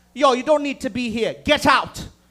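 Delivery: stern, sassy put-on Jamaican accent. Telling a story, quoting the nurse in the waiting room, sassy jamaican nurse impression. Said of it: "A fucking sassy Jamaican nurse".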